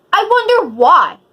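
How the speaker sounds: loud angry outburst. Recounting being asked why they were crying, the speaker answers in a raised voice. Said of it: "Sorry for raising my voice".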